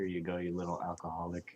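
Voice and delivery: quiet muttering under the breath. Handing the beer to the curse master, muttering under breath. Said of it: "kind of mutter under my breath".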